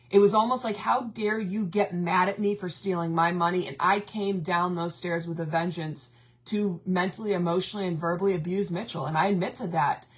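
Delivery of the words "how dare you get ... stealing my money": reenacted anger and fury, slower. Speaker recalling when he refused to talk and stayed mad at them, retelling past fury. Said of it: "I remember getting so pissed off".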